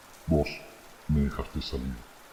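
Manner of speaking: whispered, deep, throaty, guttural monster voice. A voice answers a trembling man from the shadow of the forest: deep guttural voice. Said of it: "una voz profunda, gutural, habló".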